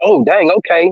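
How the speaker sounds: ordinary talk, nothing marked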